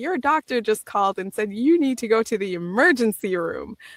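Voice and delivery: normal talking voice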